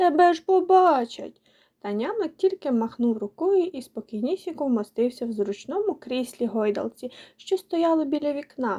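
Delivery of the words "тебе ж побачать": high, loud, frightened cry. A girl warns a boy who just appeared in her room, frightened cry. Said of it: "перелякано скрикнула дівчинка".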